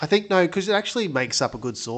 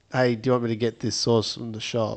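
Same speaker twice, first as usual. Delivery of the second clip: normal talking voice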